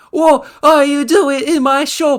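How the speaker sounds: put-on ogre voice. Rereading the broker's line on request: Shrek voice. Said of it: "I imagine it in, like, the Shrek voice".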